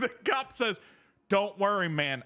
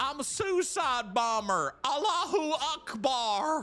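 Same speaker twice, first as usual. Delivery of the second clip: put-on high southern hillbilly accent, Akbar drawn out; 5 semitones higher than usual. Retelling a story, the speaker quotes a man from around the corner in a southern hillbilly accent. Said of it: "in this southern hillbilly accent".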